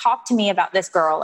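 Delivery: normal talking voice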